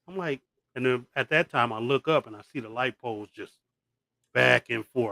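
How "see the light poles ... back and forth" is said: normal talking voice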